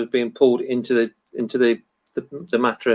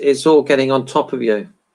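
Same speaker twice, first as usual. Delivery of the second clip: ordinary talk, nothing marked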